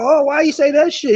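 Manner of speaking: high, put-on offended, irritated, mad griping. Mocking another speaker's complaint about a boxing pick: imitating someone mad. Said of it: "You mad talking about".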